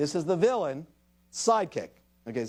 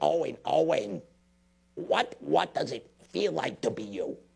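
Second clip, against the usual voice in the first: grating voice like a broken blender; 2 semitones lower than usual. Speaking as the parrot Iago to a boy: Gilbert Gottfried's Iago voice. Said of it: "It's like a broken Cuisinart".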